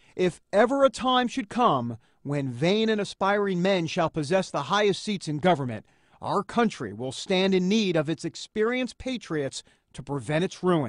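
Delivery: normal talking voice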